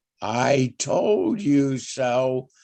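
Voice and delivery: very slow, deliberate, every word drawn out. A speaker addressing the board, saying it very slowly. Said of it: "say very slowly".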